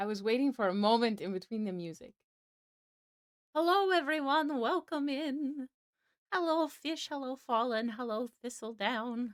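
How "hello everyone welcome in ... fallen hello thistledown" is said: put-on high-pitched elderly woman's voice. Greeting everyone by name as they arrive, old lady voice. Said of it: "I got my old lady voice on today".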